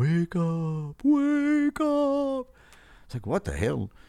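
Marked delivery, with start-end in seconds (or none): 0.0-2.5 very high, very slow, drawn-out spooky ghostly voice. Telling a joke about a guy woken in the night, ghostly voice. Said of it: "Ghostly voice".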